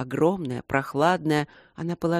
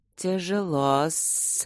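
hissed delivery. Reading a story, a creature coiling around a milk mug speaks, hissing. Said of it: "прошипела одна".

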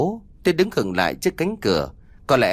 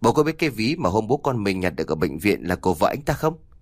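usual speaking voice

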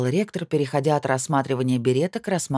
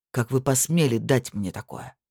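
usual speaking voice

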